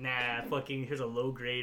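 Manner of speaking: ordinary talk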